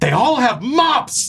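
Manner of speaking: high, slow, drawn-out pirate voice.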